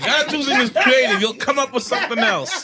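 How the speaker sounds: speaking through laughter.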